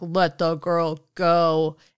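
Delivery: very slow, cool, fully in-charge commanding voice. Retelling a scene where a voice cuts in on Hel, put-on cool, authoritative Odin voice. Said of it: "a way more cool, authoritative voice cuts in".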